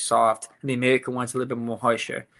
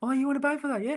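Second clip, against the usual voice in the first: put-on New Zealand accent, higher pitch; 14 semitones higher, 4 dB quieter than usual. Retelling what a New Zealander said: imitating a Kiwi accent. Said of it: "they sound like the worst one".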